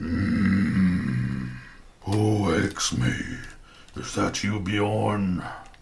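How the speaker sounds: vast, deep, resonant rumbling mountain voice, very slow. The awakened mountain speaks to the party, in a deep, vibrant voice. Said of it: "A deep, vibrant voice seems to emerge from the very roots of the mountain".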